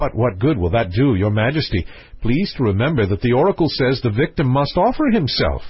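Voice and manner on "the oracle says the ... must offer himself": plain reading voice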